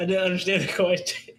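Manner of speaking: high, loud, slow talk while laughing.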